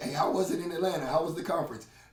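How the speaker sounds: usual speaking voice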